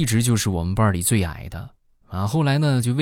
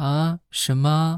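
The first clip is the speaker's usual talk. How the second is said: put-on high, babyish, childlike little voice; 6 semitones higher than usual. Retelling a colleague answering a scam call: imitating a babyish childlike voice. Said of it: "就很奶声奶气的".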